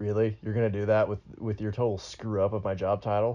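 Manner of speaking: ordinary delivery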